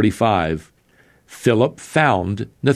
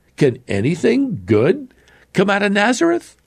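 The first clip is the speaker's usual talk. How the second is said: very high, mocking, sarcastic, swooping sing-song; 10 semitones higher than usual. Retelling Nathanael's reply to Philip in verse 46; sarcastic. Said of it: "says rather sarcastically".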